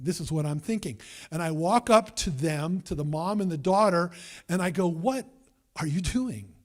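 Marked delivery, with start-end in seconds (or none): 4.9-6.5 mock indignant, demanding, angry confrontational tone. Retelling confronting a mother and daughter at the door: retelling own angry words. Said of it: "yes, I was angry".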